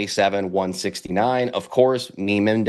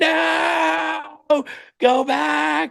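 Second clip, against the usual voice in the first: mock very high, hoarse, raspy scream, long and drawn out. Telling the baseball runners not to steal home, retelling his own scream. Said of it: "I'm screaming".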